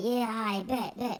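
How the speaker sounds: very high, soft little voice. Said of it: "His voice ain't match his body".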